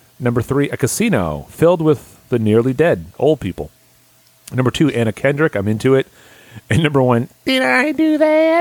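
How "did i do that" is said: very high, slow, stretched-out nerdy voice. Counting down a list to number one, the speaker uses an Urkel voice. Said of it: "In an Urkel voice".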